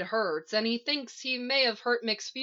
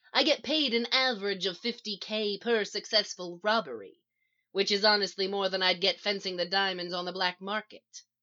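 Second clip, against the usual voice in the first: ordinary delivery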